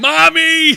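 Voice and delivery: very high, very loud, shrill scream. Retelling the scene, imitating Gene Wilder screaming for mommy. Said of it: "And then he goes".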